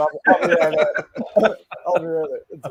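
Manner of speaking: laughing, giggling, high-pitched voice.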